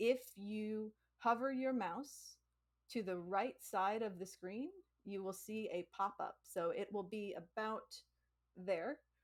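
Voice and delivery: careful unhurried delivery. Answering a viewer request for non-native english speakers, speaking slower. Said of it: "I will say this a little bit slower".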